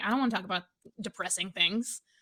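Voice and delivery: ordinary talk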